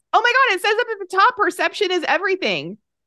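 excited yelling. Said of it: "I just yelled in the microphone".

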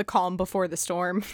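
plain

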